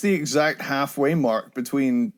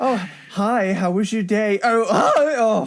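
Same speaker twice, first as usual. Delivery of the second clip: put-on cracking voice, higher; 8 semitones higher than usual. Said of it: "my voice was cracking every time".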